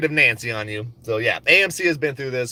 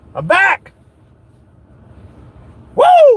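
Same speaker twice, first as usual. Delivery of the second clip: very loud, very high, excited whooping cheer; 9 dB louder than usual. Coming back to the live stream after stepping away, yelling excitedly. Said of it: "I don't know why I'm yelling like that".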